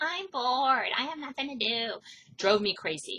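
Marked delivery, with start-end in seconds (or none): 0.0-1.9 mock whiny kid voice, higher. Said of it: "when my kids go".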